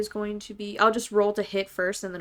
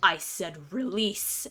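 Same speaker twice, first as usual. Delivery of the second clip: snarled, low growl under the breath; 2 semitones lower than usual. Staring down the creature, growling under the breath. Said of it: "just growl under my breath".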